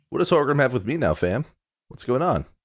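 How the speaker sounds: relaxed, laid-back dwarf voice. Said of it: "with his really laid back attitude".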